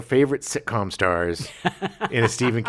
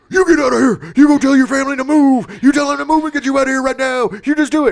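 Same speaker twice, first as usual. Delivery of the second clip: shrill, very loud, high-pitched yelling; 13 semitones higher, 9 dB louder than usual. Retelling a scene where a character yells at Pennywise: imitating James McAvoy yelling. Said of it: "yelling at Pennywise".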